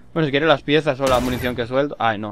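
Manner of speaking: plain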